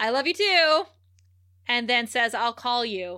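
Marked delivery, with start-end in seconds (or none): 0.0-0.8 raised, pitched-up, mocking, dripping sarcasm. Retelling a show scene where a man answers a tearful confession, a sarcastic reply. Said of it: "Angel's like so sarcastically".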